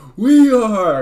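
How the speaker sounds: put-on pumped-up, high, loud excited shout like kids.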